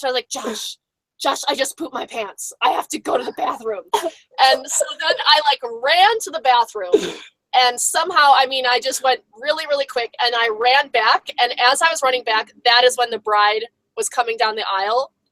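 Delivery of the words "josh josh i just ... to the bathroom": hushed whisper under the breath. Retelling what was said to someone during a wedding ceremony: imitating a whisper. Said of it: "I whispered to Josh".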